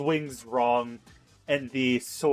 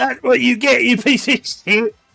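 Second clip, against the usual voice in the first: voicing a goblin; 11 semitones higher, 9 dB louder than usual. Voicing a goblin taunting a player after a hit: goblin voice. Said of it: "the goblin will".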